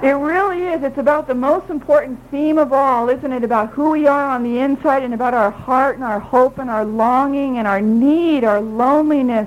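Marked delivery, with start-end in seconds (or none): none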